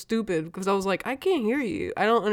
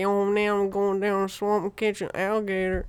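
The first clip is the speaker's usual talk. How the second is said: put-on Louisiana accent; 3 dB quieter than usual. Retelling how the guys on Swamp People talk: Swamp People Louisiana accent. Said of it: "those guys that talk Louisiana".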